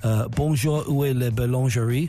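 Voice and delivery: put-on terrible English accent. Recalling a school trip to france, the speaker mimics classmates' french with a terrible english accent. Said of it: "with a terrible English accent".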